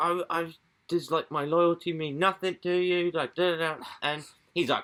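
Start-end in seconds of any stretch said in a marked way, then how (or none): 0.0-3.1 put-on pleading woman voice, much higher. Acting out what a woman said to a man who rejected her, imitating a pleading woman. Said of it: "And she's like pleading".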